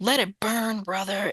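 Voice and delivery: dramatic, intense, urgent delivery. Retelling what a spirit guide said during a remote viewing, imitating a spirit guide's dramatic delivery. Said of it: "she kept saying".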